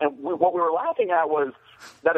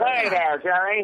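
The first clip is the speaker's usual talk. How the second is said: 1930s film villain voice; 4 semitones higher than usual. Showing how a man talks, in an old movie villain voice. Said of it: "he talks like this".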